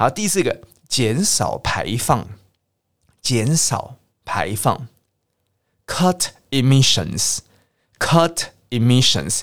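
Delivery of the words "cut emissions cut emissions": very slow, careful pronunciation of "cut emissions". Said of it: "用切掉那个字就可以了".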